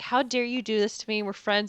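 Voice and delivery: put-on furious outburst, voice losing control. Retelling a scene where a character loses it: imitating someone losing it. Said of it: "is losing his shit".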